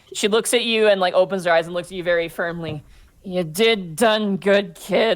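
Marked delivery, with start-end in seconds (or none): 3.2-5.1 put-on very slow, slurred drunken speech. Voicing Abby dismissively touching a cheek: acted drunk speech.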